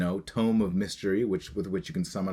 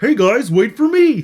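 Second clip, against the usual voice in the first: shrill, high, booming, loud little cartoon turtle voice; 16 dB louder than usual. Recalling own line from a Barbie commercial: turtle character voice. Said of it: "I played the tortoise, the turtle".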